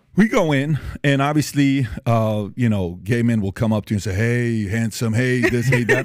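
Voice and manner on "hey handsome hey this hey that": put-on deep voice. Retelling how men at a club came up and flirted: imitating a deep voice. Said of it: "The deep voice".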